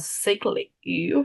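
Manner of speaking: voice goes funny with a slow creaky crack.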